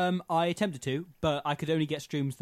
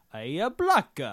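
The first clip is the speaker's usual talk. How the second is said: attempted put-on Spanish accent; 2 semitones higher, 4 dB louder than usual. Retelling what someone shouts, in an attempted spanish accent. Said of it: "was that your attempt at a Spanish accent".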